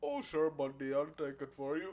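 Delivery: friendly, easygoing Canadian accent. Showing another speaker how the accent really goes; demonstrating the accent properly. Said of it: "It goes a little something like this".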